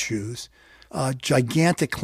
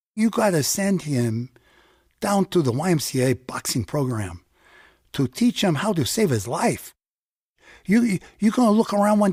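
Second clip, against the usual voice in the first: put-on Spanish-inflected American accent, higher; 4 semitones higher than usual. Retelling the neighbor speaking to the father: imitating a Chicano accent. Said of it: "with a sweet Chicano accent".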